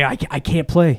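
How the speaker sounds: mock angry child voice, slow, stumbling start. Retelling a movie scene where the kid gets pissed: imitating an angry kid. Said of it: "Here he gets all pissed".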